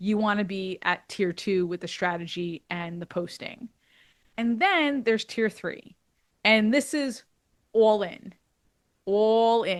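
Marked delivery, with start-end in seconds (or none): 9.0-9.8 put-on old New York accent. Explaining tier three of a posting strategy: old new york accent. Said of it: "if I could use my old New York accent there".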